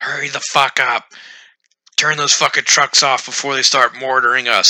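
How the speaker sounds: loud high-pitched yelling. Retelling what the gunny yelled at the squad; retelling the gunny's yell. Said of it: "He's like yelling at us".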